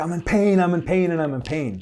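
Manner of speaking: play-acted high, pained cry, held back in volume. Retelling how a runner cried out after collapsing: imitating someone screaming in pain. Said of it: "and he's screaming".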